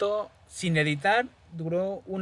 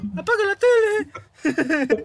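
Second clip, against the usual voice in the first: put-on very high, loud, frightened child's shouting yell; 7 dB louder than usual. Speaker retelling a night as a kid, retelling shouting at dad. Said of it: "yo le gritaba a mi papá".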